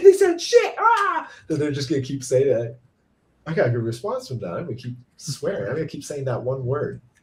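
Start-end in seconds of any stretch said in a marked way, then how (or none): 0.0-1.3 very high, loud, panicked freak-out. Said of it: "by freaking out".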